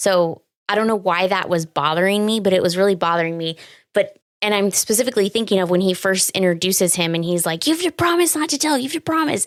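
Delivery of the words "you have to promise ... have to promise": put-on scream, higher. Retelling a movie scene where a boy makes a demand: imitating someone screaming. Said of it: "screaming at him".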